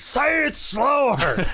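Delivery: mock, very high, insistent yelling. Recalling a line Mike Lee yelled many times, imitating Mike Lee yelling. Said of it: "Mike Lee yelled that".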